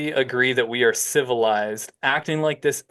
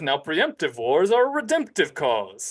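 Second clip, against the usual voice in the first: mock pompous voice, higher; 3 semitones higher than usual. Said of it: "Enter Shikari is notorious for doing a pompous voice".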